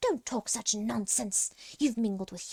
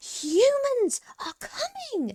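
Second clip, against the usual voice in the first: very high, shrill, swooping rat squeak; 4 dB louder than usual. Reading a story aloud, Rat speaking in the cave, shrill squeak. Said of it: "she squeaked, so shrilly that her voice echoed".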